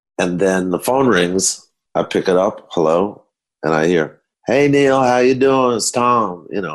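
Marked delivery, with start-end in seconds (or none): 4.5-6.5 drawling Southern voice, pitched up. Retelling a phone call, speak as Tom greeting Neil on the line, Tom's Southern drawl. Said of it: "it's the Southern drawl".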